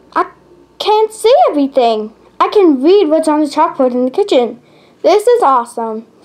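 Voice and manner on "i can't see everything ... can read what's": usual speaking voice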